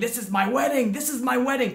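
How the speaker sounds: toned-down, mild, repeated screaming yell. Retelling how he screamed while getting up: imitating someone screaming. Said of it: "he's screaming".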